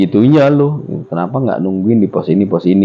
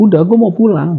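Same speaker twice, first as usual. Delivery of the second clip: mock heated, angry scolding rant; 8 semitones higher than usual. Retelling scolding a ghost tiger that followed: imitating own angry scolding. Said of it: "Gue marah-marah, gue bilang".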